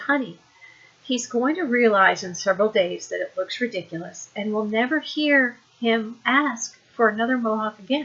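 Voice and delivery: ordinary talk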